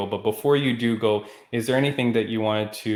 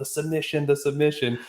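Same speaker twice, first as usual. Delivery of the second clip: put-on, acted screaming; 5 semitones higher than usual. Retelling watching a bloody fight on tv, imitating screaming at the tv. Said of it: "I'm screaming at the T V going".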